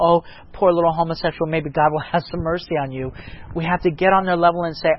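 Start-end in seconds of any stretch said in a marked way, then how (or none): none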